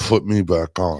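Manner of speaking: gritted-teeth, jaw-locked words through clenched teeth. Retelling what they said during rock paper scissors: retelling speaking through teeth. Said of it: "I said through my teeth".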